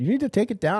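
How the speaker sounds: put-on thick European accent. Speaker retells a phone call from Polly, imitating Polly's thick European accent. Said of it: "very thick European accent".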